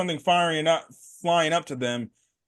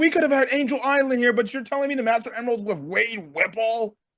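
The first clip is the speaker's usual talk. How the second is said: put-on, pitched-up, peeved, griping rant; 6 semitones higher than usual. Discussing a Sonic cameo, imagining die-hard fans' reaction, imitating pissed-off Sonic fans. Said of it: "some Sonic fans being pissed off at this".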